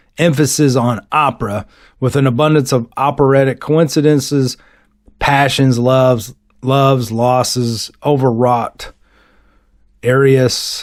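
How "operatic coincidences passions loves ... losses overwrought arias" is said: normal talking voice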